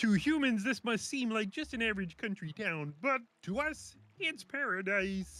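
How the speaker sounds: very high, puppet-frog character voice. Reading a passage aloud as the other speaker asked: Kermit the Frog voice. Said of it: "You got to read in the Kermit the uh, Frog voice".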